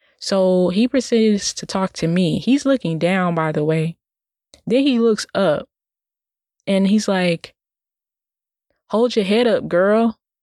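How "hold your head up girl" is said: mock tone laced with attitude. Retelling what a stranger said, imitating a remark with attitude. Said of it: "he said it, like, with an attitude almost".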